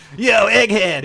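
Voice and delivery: very loud cool-dude attitude. Describing a character's Dreamcast-era version, doing his nineties attitude voice. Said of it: "you know where he's like just like".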